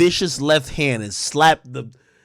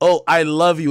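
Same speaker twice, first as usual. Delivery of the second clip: mock tearful, cracking voice, about to cry; 3 dB louder than usual. Describing women getting emotional, the speaker imitates a woman's voice cracking as if about to cry. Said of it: "you hear that crack of the voice like she about to cry".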